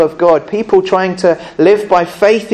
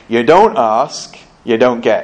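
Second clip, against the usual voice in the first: put-on very deep, low, slow advert pitchman accent; 7 semitones lower than usual. Speaker quotes a TV advert line to the kids in the Carphone Warehouse advert accent. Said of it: "practicing this accent that the guy does".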